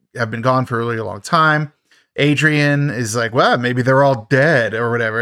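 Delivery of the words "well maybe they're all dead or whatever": plain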